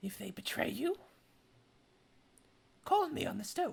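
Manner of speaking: hushed half-whisper, very private and close. She puts a stone in Micah's hand and tells him this so the others can't hear: half-whispering. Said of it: "She she whispers this".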